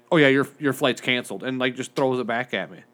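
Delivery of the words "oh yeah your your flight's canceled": imitated nonchalant, casual, offhand tone. Retelling how the lady at the counter said the flight was canceled: imitating someone nonchalant.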